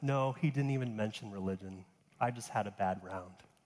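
acted embarrassed sighing. Telling a story, the speaker quotes a pro answering a friend, retelling an embarrassed sigh. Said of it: "heaved an embarrassed sigh and said".

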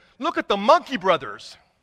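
plain

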